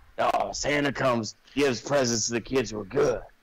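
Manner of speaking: put-on old man voice. Retelling a movie scene, imitating the Grandpa character. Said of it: "all of [name]'s impressions are the same".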